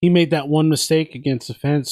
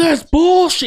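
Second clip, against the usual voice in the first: high-pitched, freaking-out voice. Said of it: "He's, like, freaking out".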